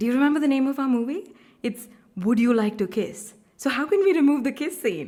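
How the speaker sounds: exasperated, high, loud, rushed pleading insistence.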